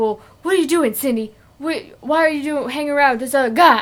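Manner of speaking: loud stumbling voice. Acting out a movie character's line to another speaker: William Shatner voice. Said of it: "I sound like William Shatner".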